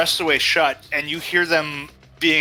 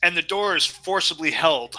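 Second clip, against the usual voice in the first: plain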